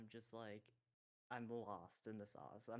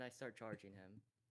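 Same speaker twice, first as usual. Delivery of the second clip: ordinary talk, nothing marked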